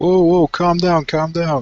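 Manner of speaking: hasty, urgent, reassuring voice. Voicing a character calling out to a frightened stranger: yelling back. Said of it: "I yelled back".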